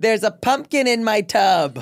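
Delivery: mock yelling. Speaker quoting a woman's line to the person who wrote it down, retelling a yell. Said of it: "She also yells".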